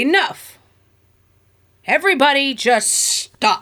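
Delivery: thundering, loud voice. Game narrator voices a figure planting a staff on the ground, booming voice. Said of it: "in a booming voice".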